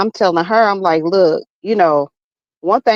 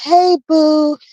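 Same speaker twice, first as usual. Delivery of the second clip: mock sugary, fake-sweet tone, higher; 9 semitones higher than usual. Mocking the way a woman greets her son: imitating a fake-sweet voice. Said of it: "the ones that act sweet, but they evil".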